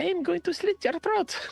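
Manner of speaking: put-on small, very high French accent. Narrating to the players what they hear, in a tiny french accent. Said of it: "tiny French accent say".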